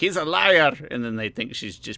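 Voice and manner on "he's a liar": blaring, very loud, high-pitched delivery. Retelling a TV jury scene where a character calls someone a liar: very loud Gloria voice. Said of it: "in her very loud Gloria voice".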